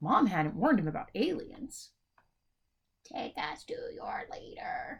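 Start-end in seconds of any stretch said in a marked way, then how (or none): 3.0-5.0 small, slow, squeaky alien-voice whisper. Narrator reads two aliens confronting Ollie, tiny squeaky alien voices. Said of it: "they said in tiny, squeaky voices".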